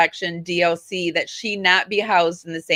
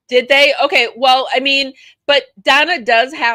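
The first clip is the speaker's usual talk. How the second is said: far too loud, high-pitched shouting; 7 semitones higher, 7 dB louder than usual. Discussing a case with Doctor Debbie, caught up and yelling. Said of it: "oops, I'm yelling, sorry".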